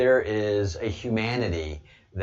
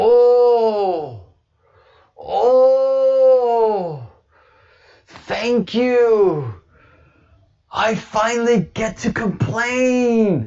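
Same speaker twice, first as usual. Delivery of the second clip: high, loud Scottish exclamation with long stretched "oh"; 13 semitones higher, 8 dB louder than usual. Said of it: "you sound right Scottish to me".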